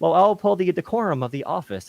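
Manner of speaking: stiff, statue-like, very high-pitched delivery. Mocking how a party leader talks in interviews: stiff Hakeem Jeffries impression. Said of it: "he'll be as stiff as a statue and talking like".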